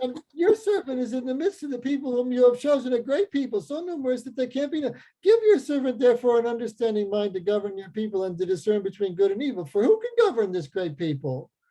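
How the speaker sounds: mocking, facetious tone. Reading a passage aloud to an audience in a deliberately facetious tone. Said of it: "I'm deliberately reading that in a facetious tone".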